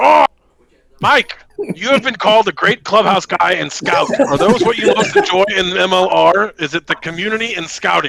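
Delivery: put-on angry reading voice. Host reading interview questions to a guest, in an angry reading voice. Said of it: "He's reading in his angry voice".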